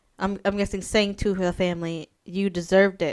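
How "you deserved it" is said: usual speaking voice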